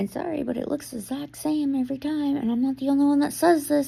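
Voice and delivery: hushed whisper. Talking about a woman who gets her hair done weekly, whispering. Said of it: "I don't know why I'm whispering".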